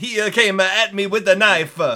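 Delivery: bad put-on Italian accent. Imagining an audiobook done with a really bad accent: really bad Italian accent. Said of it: "done with a really bad Italian accent".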